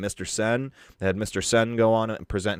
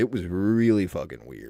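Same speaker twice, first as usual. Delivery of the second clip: usual speaking voice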